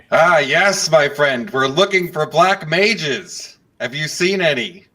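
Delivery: shouting too loud. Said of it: "take it down a few levels".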